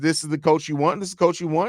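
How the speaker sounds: ordinary talk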